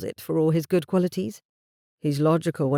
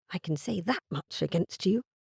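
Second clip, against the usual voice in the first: soft, hushed voice; 8 dB quieter than usual. Narrator reading Ivy's words to him when she speaks at last, in a hushed voice. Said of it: "it was in a hushed voice".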